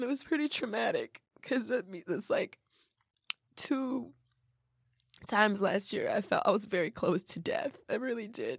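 tearful, crying voice. Speaker opening up about something long ignored, crying. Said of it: "that's why I'm crying so much".

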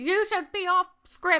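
put-on yelling. Retelling how a pageant host yells at the children: imitating someone yelling. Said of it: "Literally yelling at them".

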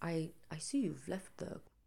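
very quiet, slow, posh British accent. Trying to do a fancy British accent, sounding like Sherlock Holmes. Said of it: "every time I try to do a fancy one, I sound like Sherlock Holmes".

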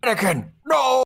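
ghostly shout pitched way up high.

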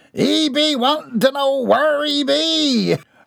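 laughing out, very high pitch. Narrator reads the first one's reply about Mortimer, laughing. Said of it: "laughed the first".

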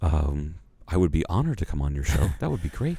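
voice dropped low, then rising in pitch. Retelling a radio guest's reply, imitating Anna Gasteyer's dropped voice. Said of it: "and then she dropped her voice".

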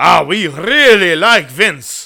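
loud, slow, unplaceable mock accent with rolled R.

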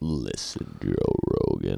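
deep, rumbly voice. Describing a podcast guest's voice, then imitating him: deep rumbly Joey Diaz impression. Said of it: "His voice is just so deep and rumbly".

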